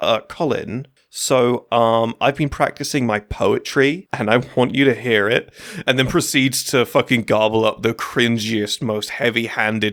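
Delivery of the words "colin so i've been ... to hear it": usual speaking voice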